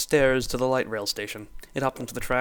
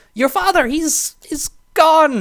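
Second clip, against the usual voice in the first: weird, shrill, drawn-out, very high and loud nurse voice; 12 dB louder than usual. Reading a story aloud, voicing a hospital nurse on the phone, in a weird nurse voice. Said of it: "That was a weird voice".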